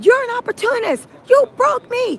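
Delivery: put-on, very high, angry, shrieking scream. Retelling how he screamed at her, retelling a scream. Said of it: "He then was screaming at her".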